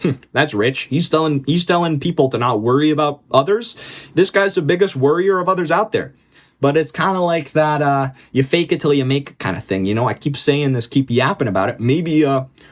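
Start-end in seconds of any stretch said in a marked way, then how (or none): none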